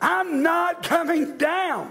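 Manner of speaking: very high, very slow, angry, defiant. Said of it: "y'all are angry folk".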